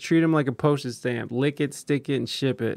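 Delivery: ordinary talk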